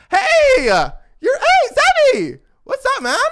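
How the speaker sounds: cheery, jolly bro voice, very high and swooping. Retelling how a smaller rugby dude turned around to greet him: imitating a jolly smiling greeting.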